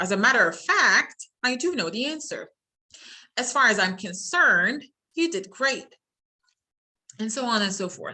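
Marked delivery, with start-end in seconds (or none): 0.0-1.3 upward pitch lift at the end of fact. Intonation lesson on introductory phrases, rising on fact. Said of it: "the introductory word has a rising".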